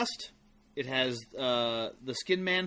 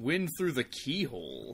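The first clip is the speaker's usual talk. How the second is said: sexually suggestive, swooping sing-song emphasis. Mimicking how the other speaker said a phrase: imitating a sexually suggestive delivery. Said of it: "You were like".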